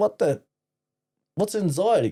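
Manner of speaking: high, baffled, incredulous tone. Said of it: "And I'll be like".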